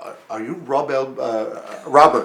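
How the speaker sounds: put-on heavy, thick, halting, slow German accent. Retelling a call from someone asking his name: imitating a thick german accent. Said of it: "this thick German accent asking me".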